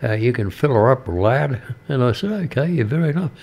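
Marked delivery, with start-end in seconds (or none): 0.2-1.6 put-on casual American accent. Retelling what a customer at the petrol station said: imitating an American accent. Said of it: "he said in his American accent".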